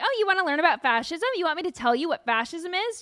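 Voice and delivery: smug, condescending tone. Retelling how a woman talked down to students: mock-smug voice. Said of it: "you just like this smug voice".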